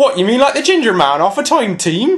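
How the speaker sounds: put-on West Country accent. Asked to try a West Country accent, the speaker attempts it: West Country accent. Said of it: "Try a West Country accent".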